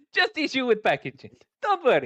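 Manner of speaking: bad generic shady salesman voice, high, swooping. Speaking as a supplier character, in a generic dodgy salesman accent. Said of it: "generic, dodgy salesman accent".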